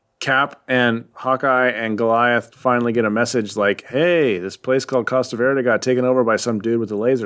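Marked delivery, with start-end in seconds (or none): none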